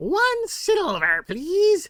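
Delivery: very high, swooping, raven-like bird-creature voice. Voicing a raven-like Kenku guide asking for payment: Kenku guide voice. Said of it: "he stretches out a taloned hand".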